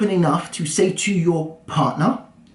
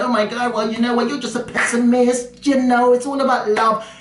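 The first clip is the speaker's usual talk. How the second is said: put-on, high-pitched voice of an objecting critic; 6 semitones higher than usual. Speaker acts out viewers who will object to his advice; imitating a critic. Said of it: "Some of you will come at me".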